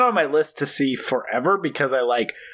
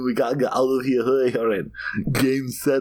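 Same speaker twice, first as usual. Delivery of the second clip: put-on German accent. Trying again at a Schwarzenegger line, drifting into Herzog voice. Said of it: "I'm going Herzog".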